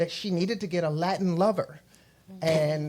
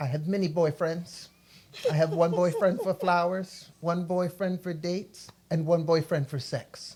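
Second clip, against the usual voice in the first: dead serious, flat, matter-of-fact deadpan delivery. Retelling a house parent's answer to a boy's question: imitating a deadpan reply. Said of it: "Deadpan face".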